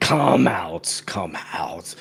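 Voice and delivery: strange, low, metallic-sounding voice. The game master voices something calling out from behind a door, in a weird metallic voice. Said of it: "this weird s- metallic voice going".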